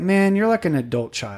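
ordinary talk, nothing marked

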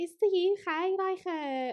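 high put-on Liverpool accent.

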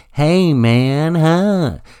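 weird, loud, high-pitched, phony fake American accent. Mocking people who come back from america, in a weird fake american accent. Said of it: "weird American accent".

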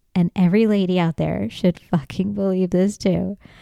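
ordinary talk, nothing marked

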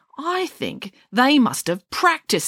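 contemptuous, disdainful tone. Shelley replies to a question from Aunt, speaking contemptuously. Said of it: "said shelley contemptuously".

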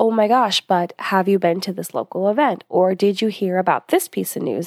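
usual speaking voice

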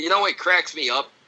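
ordinary delivery

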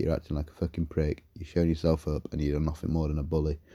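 plain

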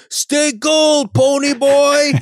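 very high, drawn-out, jeering, mocking teasing yell. Recounting a stranger in a passing pickup yelling at Ralph, retelling a teasing yell. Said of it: "He yells out".

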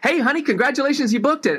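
cheery, very high, fast, gushing delivery.

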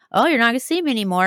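mocking, teasing, taunting jeer. Retelling how Scott mocked her before she cried: imitating Scott mocking her. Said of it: "he's kind of mocking her".

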